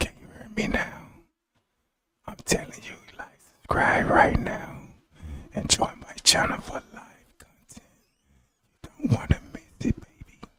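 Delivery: breathy, fake seductive whisper. Asking viewers to subscribe and join the channel: put-on sexy voice. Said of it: "you like that sexy voice?".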